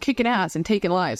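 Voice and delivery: ordinary talk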